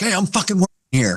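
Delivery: very high-pitched yell. Retelling a coach snapping at a cheering fan: imitating Mike Tomlin yelling. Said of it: "yelling at the guy".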